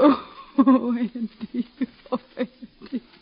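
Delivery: tearful voice. A mother telling her son that Robbie has died, crying. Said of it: "Don't cry, Ma".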